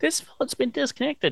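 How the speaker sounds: very high, fake, put-on woman's voice. Retelling how a character answers a phone in a put-on effeminate voice. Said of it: "his best, uh, I'm a f-, a woman, f-, effeminate voice".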